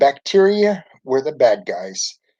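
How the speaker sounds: ordinary delivery, nothing marked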